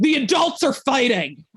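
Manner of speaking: high, furious, snarled outburst. Voicing a character in crisis mode: snarling. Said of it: "She snarls".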